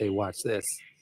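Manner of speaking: quick, soft, rushed mutter under the breath. Imitating Mural Joe muttering quickly under his breath: Mural Joe muttering quickly under breath. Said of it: "under his breath and very quickly in passing".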